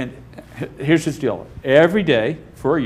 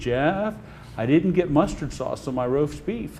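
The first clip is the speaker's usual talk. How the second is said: put-on elderly southern woman's voice and accent; 2 semitones higher, 4 dB quieter than usual. Speaker quotes a woman complaining to him, imitating her old southern voice. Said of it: "It was just old Southern voice".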